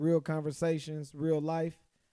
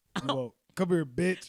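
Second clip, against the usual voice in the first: mock rough, unfriendly talk; 2 semitones higher than usual. In a conversation about bedroom talk, demonstrating rough talk, not nice. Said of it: "you don't want to be talked to nice?".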